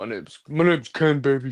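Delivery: voice dropped way down, very deep.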